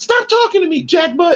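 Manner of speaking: very high, squeaky, upset and angry voice. Retelling a lady going off on Derek, imitating a high-pitched squeaky voice. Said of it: "Real high pitched squeaky voice".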